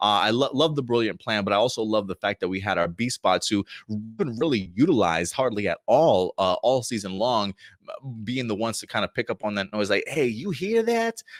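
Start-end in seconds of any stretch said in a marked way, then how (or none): 10.1-11.2 put-on high, slow New York accent. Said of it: "why has he got a New York accent".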